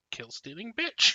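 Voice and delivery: sly, cheeky, passive-aggressive taunting tone. Voicing a character with a smirk at another player: passive-aggressive and cheeky. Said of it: "passively aggressive, um, cheeky smirk to you, saying".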